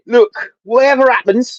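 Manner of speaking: fake London Cockney accent, read aloud. Streamer reads out a viewer's chat comment in a put-on cockney accent. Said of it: "I'm putting a like a a Cockney accent on your on your on your comment".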